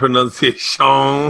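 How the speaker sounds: put-on Cajun character voice. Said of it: "You're doing the Adam Sandler, Cajun man".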